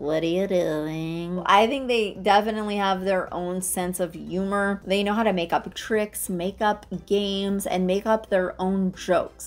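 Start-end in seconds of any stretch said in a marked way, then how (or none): 0.0-1.4 eerie put-on creepy voice, drawn out. Retelling how the bird tried to scare someone, in a creepy voice. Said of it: "he would put on this creepy voice and he was like".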